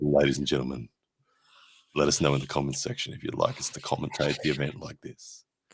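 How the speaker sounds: hushed, rich, deep tones. Commentator speaking to viewers in a hushed commentary bit, quiet, rich dulcet tones. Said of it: "then we'll talk really quietly, and you can hear the rich dulcet tones".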